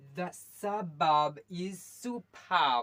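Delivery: very slow, loud, word by word.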